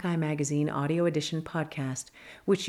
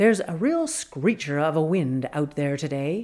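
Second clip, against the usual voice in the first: news anchor, newscaster-style delivery; 4 dB louder than usual. Retelling how he tried out a new word in his newscaster voice. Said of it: "he dons his newscaster voice and tries it out".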